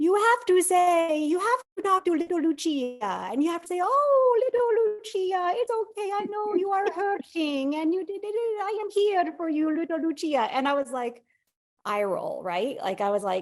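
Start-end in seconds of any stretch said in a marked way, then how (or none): 0.0-10.5 put-on Italian accent at very high pitch. Retelling what an Italian therapist told them, in an Italian accent. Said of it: "He had this Italian accent".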